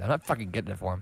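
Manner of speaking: hushed, in-character half-whisper. Playing a character who speaks aside to a companion: in-character half-whisper. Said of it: "I whisper to Ulysses".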